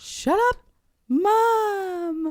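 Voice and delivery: put-on grinning teasing voice. Retelling how she said it to Mom, laughing and smiling real big. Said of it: "laughing and smiling real big".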